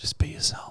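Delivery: soft, breathy whisper, close to ear. Retelling what a girl at a party whispered: imitating someone whispering. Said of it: "she starts whispering to me".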